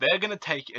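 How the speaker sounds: ordinary delivery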